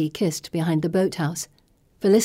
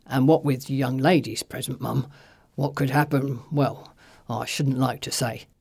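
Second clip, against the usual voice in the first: discreet, low, lowered voice; 5 semitones lower than usual. Reading aloud, the narrator voices Mr. Miller speaking to the missus in a lowered voice. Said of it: "He lowers his voice".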